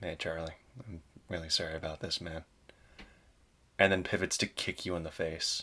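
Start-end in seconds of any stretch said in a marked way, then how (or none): 0.0-2.4 gentle, soft, low-pitched murmur. Game narrator voicing a man leaning down to speak to Charlie, in a soft voice. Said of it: "in a soft voice just says".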